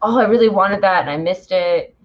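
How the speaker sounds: normal talking voice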